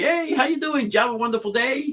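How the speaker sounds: very high, friendly voice. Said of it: "a lot of people say".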